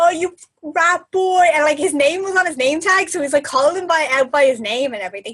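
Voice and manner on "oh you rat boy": put-on high, drawn-out drunken yell from a man. Retelling a man shouting at a twenty-year-old alone at 1 a.m., retelling a yell. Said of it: "huge guy yelling like".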